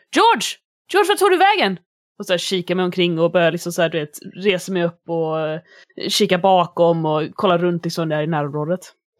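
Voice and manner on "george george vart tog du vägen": aghast, very high dismayed crying out. Acting out calling for someone who has suddenly vanished: dismayed. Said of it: "Jag som blir bestört och så här".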